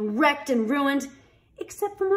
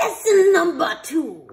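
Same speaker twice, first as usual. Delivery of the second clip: snarled, loud and high-pitched; 6 semitones higher, 7 dB louder than usual. The headmaster announces the next lesson to the beasts, snarling. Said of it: "the headmaster snarled".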